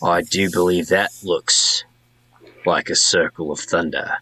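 hushed whisper in a character voice. Voicing a character who speaks to the group about the hill: whispering in character. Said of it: "Falcon whispers to the group".

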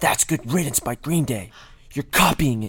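high, loud, angry, accusing yell.

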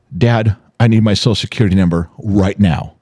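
ordinary talk

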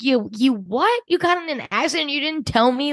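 shocked, disbelieving tone.

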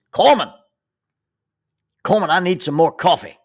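sudden, rude, loud, high-pitched yell. Retelling someone yelling for more coffee: imitating someone yelling. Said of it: "He yells".

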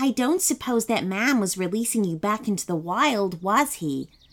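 ordinary delivery

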